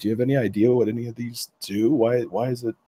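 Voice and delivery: hushed, soft voice. Pulling Corwin aside to talk to him, hushed voice. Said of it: "in as hushed a voice I can".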